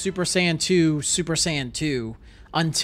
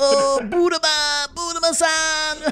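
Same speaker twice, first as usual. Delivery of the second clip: very high-pitched anime-style voice; 12 semitones higher than usual. Comparing the dub and Japanese versions, imitating Oolong's Japanese voice. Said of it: "In Japanese, his voice is like".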